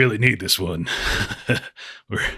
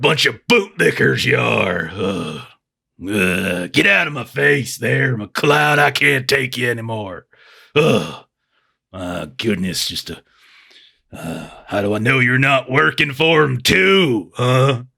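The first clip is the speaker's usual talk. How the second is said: put-on acted drunken speech. Voicing a character who tells McLeod to get out of his face: acting drunk. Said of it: "he's totally drunk".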